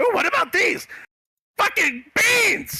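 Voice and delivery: high-pitched goblin voice. Voicing a goblin merchant who greets the players. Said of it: "he just holds out this handful of beans".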